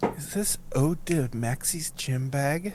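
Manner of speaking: hushed, slow, confidential little aside. Voicing Sean leaning over to Zed at dinner: speaking very quietly. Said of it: "very quietly goes".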